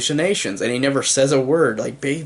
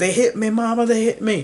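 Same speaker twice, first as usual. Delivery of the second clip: mock, high, shrieking, wailing scream; 8 semitones higher than usual. Recounting a movie scene where Junior screams to his mama, retelling a scream. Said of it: "screaming at him".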